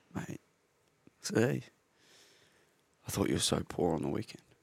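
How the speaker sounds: very quiet, soft, hushed voice. Retelling the coach's review of the game: Colo impersonation, real soft. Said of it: "do you have a Colo impersonation".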